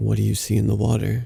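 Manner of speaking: flat, toneless monotone voice. Reading a scary story, a possessed father asks: monotone voice. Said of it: "in the same monotone voice".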